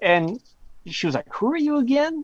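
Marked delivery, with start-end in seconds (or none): 1.3-2.2 acted out offended, very high affronted tone. Retelling a phone call with a special agent: imitating an offended agent. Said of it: "she was very affronted that I was calling her".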